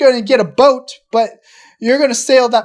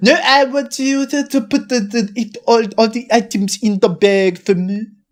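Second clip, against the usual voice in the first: put-on French accent. Acting out a Frenchman insisting a shop bag his items: put-on French accent. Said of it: "like a Frenchman goes to, like, Shop and Save".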